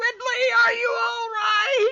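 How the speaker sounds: put-on very high, drawn-out, calling shout in a boy's voice. Voicing a running child who calls to a fallen friend: yelling as a child NPC.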